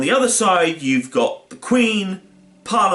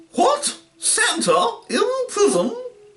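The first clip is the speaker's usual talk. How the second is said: very high, slow royal voice. Retelling a story, imitating a storyteller's Queen impression. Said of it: "doing an impression of the Queen".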